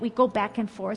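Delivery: ordinary talk, nothing marked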